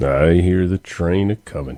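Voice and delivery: low, deep, dropped voice. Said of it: "drop my voice a little lower".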